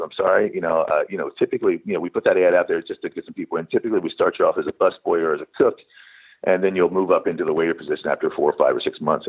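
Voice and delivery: ordinary talk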